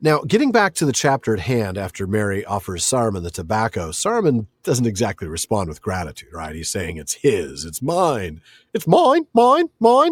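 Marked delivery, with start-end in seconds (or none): 7.0-10.1 bad put-on Australian seagull voice, higher and louder. Quoting Saruman claiming the tobacco as a seagull: Finding Nemo seagulls voice. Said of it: "my terrible version of an Australian accent".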